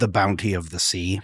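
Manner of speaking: put-on pirate voice. Repeating a phrase another speaker said, in a pirate voice. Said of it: "I just keep hearing in a pirate voice".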